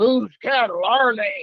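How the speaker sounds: low-pitched, deep voice. Retelling the first thing a guy on a show said: low voice. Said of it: "with his low voice".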